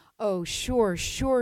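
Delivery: mock-sarcastic, put-on sarcasm. Retelling a bitter patient's reply when offered to touch the animals, mock-sarcastic. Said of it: "he said sarcastically".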